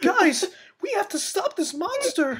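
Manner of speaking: very high, out of breath, about to cry. Complaining about how Preston always talks, imitating Preston breathless and near tears. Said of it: "talk like he's like gonna be out of breath or like he's about to cry".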